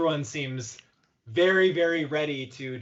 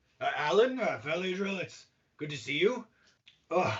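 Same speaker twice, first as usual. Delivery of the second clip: panting gruff dwarf voice, higher; 4 semitones higher than usual. Voicing a running dwarf captain catching up: out of breath dwarf captain. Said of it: "he's nearly completely out of breath".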